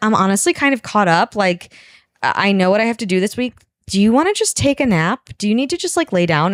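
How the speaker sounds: ordinary talk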